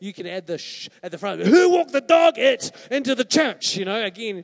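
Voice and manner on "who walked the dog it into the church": put-on loud shout, higher and louder. Retelling how a woman in the church shouted out about the carpet: imitating a loud shout. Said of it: "shouts out quite loudly".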